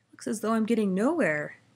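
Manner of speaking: said through a yawn. Milo, driving mile after mile and getting nowhere, talks to himself, yawning. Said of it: "yawned Milo".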